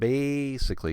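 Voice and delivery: first syllable ba- of basically held long. Demonstrating word stress while defining a function, stressing 'basically'. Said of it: "hold that sound".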